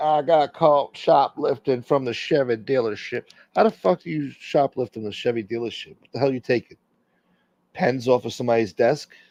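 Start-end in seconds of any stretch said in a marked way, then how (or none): 0.0-3.2 unhurried, slow Southern drawl. Reading out a viewer's message: southern accent. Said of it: "In a southern accent".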